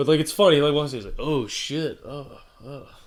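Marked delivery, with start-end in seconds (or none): 1.2-2.9 wooden, hammy bad-actor delivery, very slow. Retelling a pool cleaner's line from a video: imitating terrible acting. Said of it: "just terrible acting".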